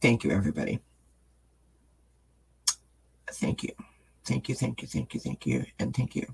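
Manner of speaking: crying, tearful voice barely above a whisper. Thanking viewers after reading their kind messages, crying. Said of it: "I'm just crying".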